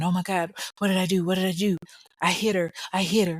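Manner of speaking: put-on frantic, panicked babbling with rambling repeats. Retelling what a bystander heard the driver keep saying: imitating someone rambling in panic. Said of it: "Brandy rambling".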